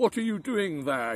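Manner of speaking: harsh, gruff giant voice. A giant comes home to find children playing in his garden; very gruff voice. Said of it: "he cried in a very gruff voice".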